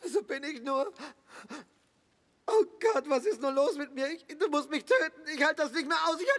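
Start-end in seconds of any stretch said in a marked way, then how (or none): 2.5-6.2 distraught, agitated, upset and worked up. In a drama, the injured fiancée speaks to her partner, distraught and agitated. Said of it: "beruhig dich".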